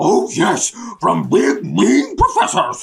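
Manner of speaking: low, deep, rough cartoon dog voice. In a roleplay scene, answering Shaggy, in a Scooby-Doo voice. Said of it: "You are doing the voice".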